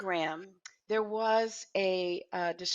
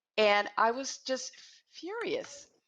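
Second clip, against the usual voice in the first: ordinary talk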